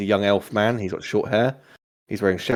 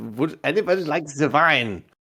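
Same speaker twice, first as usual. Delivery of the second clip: put-on French accent on every word, pitched up; 6 semitones higher than usual. Retelling how he offers wine to everyone else, in a french accent. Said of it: "French accent".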